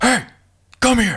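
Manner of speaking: very high, super stern call. Retelling how they spoke to kids when working with them: imitating own super stern voice. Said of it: "super stern and be like".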